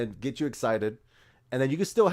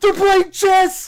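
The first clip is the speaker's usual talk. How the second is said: very loud, very high-pitched, shrill, thrilled yell; 13 dB louder than usual. Acting out a guy reacting to the X-Men trailer: mock-excited loud shout. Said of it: "that's how he shouted it".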